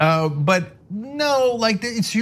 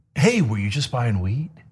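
gotcha tone, lower; 6 semitones lower than usual. Retelling the guy asking about buying weed, imitating an I-caught-you tone. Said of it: ""I, I kinda caught you" kind of, uh, tone of voice".

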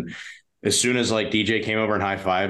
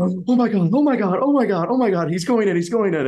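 very high, loud, gasping, frantic hyperventilating; 12 semitones higher, 5 dB louder than usual. Recalling a video from mom, imitating the sister hyperventilating. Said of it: "you can like hear my sister just like hyperventilating".

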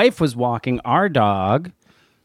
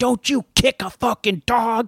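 high, shrill screaming outburst; 5 semitones higher than usual. Retelling how a dog owner yelled at her from across the street, imitating someone screaming. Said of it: "the owner just starts screaming at her".

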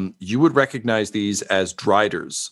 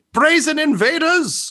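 very high, loud yelled call; 3 dB louder than usual. Voicing someone who answers the party from above: yelling back. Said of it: "hear someone yell back".

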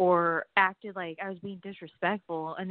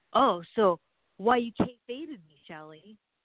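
put-on aggressive voice. Retelling how a wrestling school classmate confronted her: imitating Bo Cooper, aggressive. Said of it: "all aggressive about it".

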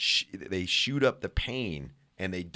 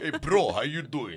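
laid-back, easy, pitched-up bro-style voice; 6 semitones higher than usual. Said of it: "he would be like".

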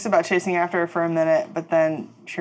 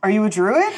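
loud yelling, called out; 3 semitones higher, 3 dB louder than usual. Voicing a wolf chasing someone through the forest: yelling after someone. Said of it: "she's just yelling after it".

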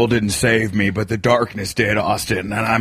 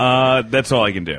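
ordinary talk

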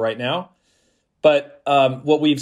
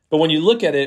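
ordinary talk, nothing marked

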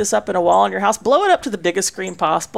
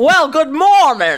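high, loud feminine Southern drawl with two pitch dips; 6 semitones higher, 5 dB louder than usual. Imitating a southern talker described to others: feminine southern voice with two dips. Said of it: "it's a very feminine voice".

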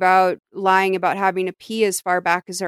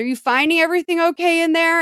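mock high, carrying shouted yell; 9 semitones higher than usual. Retelling what Kevin calls through the bathroom door: imitating Kevin yelling. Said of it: "and he yells".

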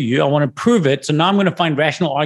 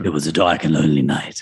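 sinister storyteller voice, very low and evil; 11 semitones lower than usual. Demonstrating how they would open a late night story, in an evil voice. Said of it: "Your voice just got evil as you do that".

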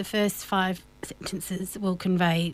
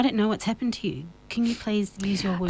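usual speaking voice

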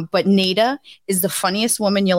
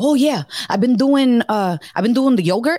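put-on Spanish accent laid on thick; 4 semitones higher than usual. Speaker retelling what a woman told them, heavy thick Spanish accent. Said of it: "she has this heavy thick spanish accent".

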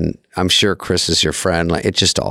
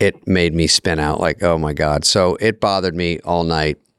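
usual speaking voice

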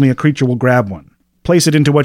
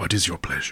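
very deep, very soft, hushed inner voice; 7 semitones lower, 13 dB quieter than usual. A storyteller voices a many-handed creature leaning over the bar: telepathic creature voice in head. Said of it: "you just hear a voice in your head that says".

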